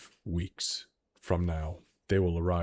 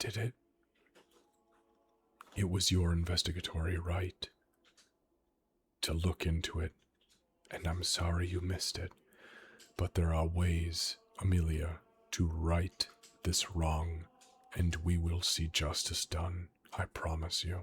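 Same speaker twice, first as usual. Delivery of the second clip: whispered character voice; 3 dB quieter than usual. Voicing a character who promises Amelia justice: Alara whispering. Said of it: "you hear Alara whisper".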